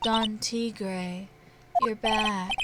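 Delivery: evil menacing voice. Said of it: "a voice that's like evil seeping into your head".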